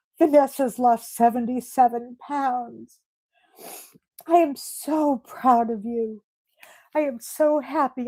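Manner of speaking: emotional voice on the verge of crying. Speaker announcing another person's weight loss to them, on the verge of tears. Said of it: "I'm gonna cry".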